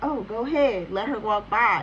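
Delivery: normal talking voice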